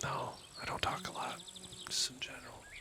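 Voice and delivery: soft, high, unvoiced whisper. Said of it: "I'll whisper now".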